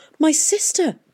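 very high-pitched, said on a gasp. A listener reacts to a confession about a killed child; gasped. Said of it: "gasped Catherine".

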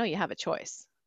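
put-on flat, bland, no-emotion, nonchalant delivery. Recounting the little inner voice that kept repeating this, retelling a bland, emotionless voice. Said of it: "very nonchalant, very bland, no emotion".

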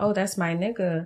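ordinary talk

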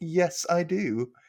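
mock proud, pleased voice. Retelling how Sally answered a woman's question about face cream, imitating Sally proudly. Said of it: "And Sally proudly's like".

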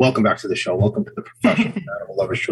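quiet, grave, very serious host-style voice. Welcoming listeners back to the show: put-on quiet serious voice. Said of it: "it's my serious professionals and animal lovers voice".

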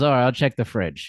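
put-on, nonchalant, casual delivery. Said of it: "very nonchalantly delivered".

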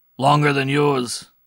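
sharp, cutting, very loud snap back. The man at the wheel answers the other man's question: sharp reply. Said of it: "replied the man at the wheel sharply".

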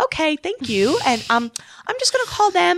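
very high, put-on, polite woman's voice.

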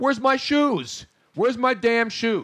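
mock, high-pitched screaming child freaking out. Retelling a child's outburst in a shoe store: imitating a child screaming. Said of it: "He started screaming".

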